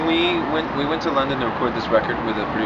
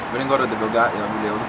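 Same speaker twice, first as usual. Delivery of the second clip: ordinary delivery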